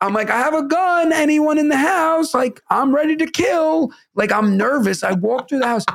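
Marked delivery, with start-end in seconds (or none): 0.3-2.3 put-on shouting, raised and high-pitched. Recalling opening the door with the alarm blaring, retelling a yell over an alarm. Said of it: "I'm yelling because the alarm's blaring".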